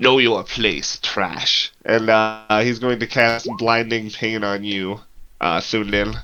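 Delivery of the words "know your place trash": ice-cold, very cold, contemptuous tone. Voicing a villain turning on a player character: very cold delivery. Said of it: "turn to you and just very coldly".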